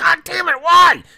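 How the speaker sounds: furious scream, very high, shrill and very loud. Retelling cursing at a game he loved, retelling a frustrated cursing scream. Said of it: "cursing and screaming like".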